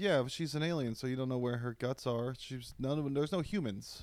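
ordinary talk

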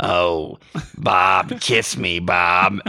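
very rough, low, raspy, smoke-worn voice. Retelling a scene where Patty asks Bob to kiss her; Patty's rough smoker's voice. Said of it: "she's a lifetime smoker and has a very rough voice".

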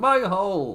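put-on, high-pitched shrieked-out screaming yell. Retelling how a wrestler reacted in pain on TV: imitating Nia screaming. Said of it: "just screaming".

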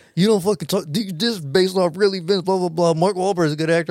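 mad, defensive outburst, acted out. Retelling how his dad stood up and snapped at him: mock-angry dad outburst. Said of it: "why are you so mad?".

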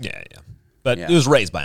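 ordinary delivery

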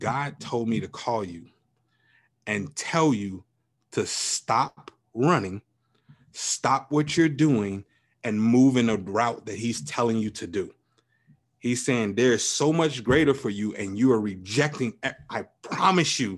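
ordinary delivery

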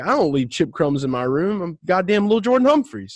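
angry, offended, high voice with rising pitch. Imagining a player's reply to being teased: imitating a pissed-off Lil Jordan Humphreys. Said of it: "he's probably pissed off right now".

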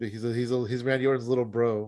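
normal talking voice

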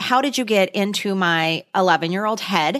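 ordinary delivery

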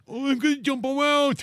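mocking put-on imitation of children's voices. Mocking the little kids who play Fortnite: mocking impression of kids' voices. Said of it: "Why does everyone sound like that to you?".

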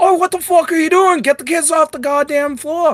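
put-on yelling. Retelling how a man yelled at the guards about the kids, retelling a yell. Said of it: "yells at the".

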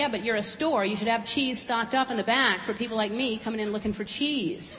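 usual speaking voice

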